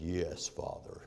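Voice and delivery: sinister, hushed, breathy devilish whisper. Retelling a son answering his exasperated father, mock-satanic voice. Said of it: "In my most satanic voice".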